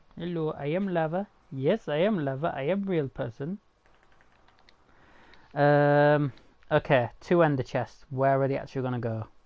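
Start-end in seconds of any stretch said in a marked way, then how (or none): 0.2-3.6 put-on Jamaican accent. Voicing the lava as a joke in a put-on Jamaican accent. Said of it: "giving it a Jamaican accent".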